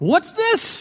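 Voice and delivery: put-on very high, overdone British accent. Retelling what the man beside him said holding up the ball, imitating Des Evans's big British accent. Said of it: "said in his biggest British accent".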